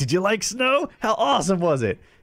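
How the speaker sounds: put-on eager excitement, all worked up. Retelling asking her about her first snowfall, retelling own excitement. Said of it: "I was all excited".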